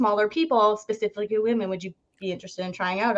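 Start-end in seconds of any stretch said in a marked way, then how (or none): none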